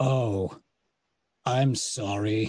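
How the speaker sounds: pained, wounded voice of someone badly hurt. Playing a bloodied, limping character in a roleplay game, pained, wounded voice. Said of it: "I like can't walk straight. I'm like".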